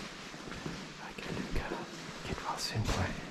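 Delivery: soft, hushed whisper. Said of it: "I'm whispering because, you've gotta be very quiet in here".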